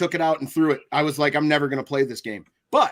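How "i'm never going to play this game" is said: plain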